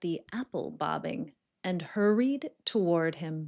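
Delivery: plain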